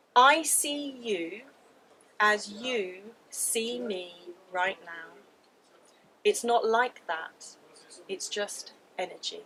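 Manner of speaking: mock steady, weighty, calm, grounded voice. Retelling what a father said in the shower: imitating a profound, grounded voice. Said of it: "in a very profound, very grounded voice".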